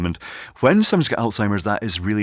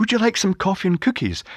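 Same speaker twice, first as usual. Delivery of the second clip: very high, sunny, bright, cheerful voice; 11 semitones higher than usual. Demonstrating how to walk back into the room with a bright, cheery voice. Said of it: "a bright, cheery voice say".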